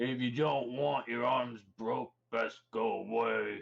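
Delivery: rough, gruff voice. A narrator voices the person behind a door, in a gruff voice. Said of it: "a gruff voice comes to the door".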